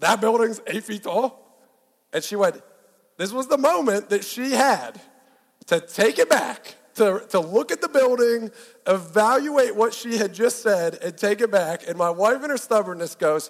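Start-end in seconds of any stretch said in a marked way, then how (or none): 0.0-1.4 sarcastic, mocking voice. Retelling own reply to a claim by a wife: imitating own sarcastic question. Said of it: "my level of sarcasm matched".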